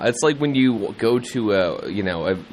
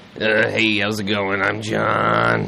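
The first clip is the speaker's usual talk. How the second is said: grouchy put-on voice. Asked to do a John impression, speaker introduces himself in an impression of John. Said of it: "I sound like Oscar the Grouch".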